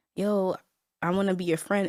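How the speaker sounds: ordinary delivery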